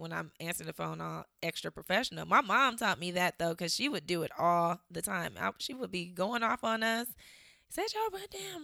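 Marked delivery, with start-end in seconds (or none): 7.7-8.6 put-on fussing scold with the voice way up high. Retelling the mother scolding the kids: imitating a mother fussing.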